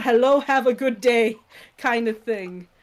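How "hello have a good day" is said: put-on Indian accent. Describing a movie character's sudden accent, speaker demonstrates an Apu-style stereotypical Indian accent. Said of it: "does one of the most stereotypical Indian accents".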